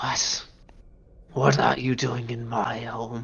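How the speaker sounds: very low, soft, crackling voice. Voicing a creature that speaks Draconic to intruders in its home, very low, crackling voice. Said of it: "in like a very, very low, kind of crackling voice".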